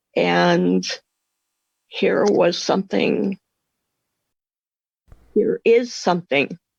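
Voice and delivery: emotional, choked-up, catching voice. Telling how the pain finally became bearable after years of relying on pills, choked up. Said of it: "I'm getting a little bit um, choked up".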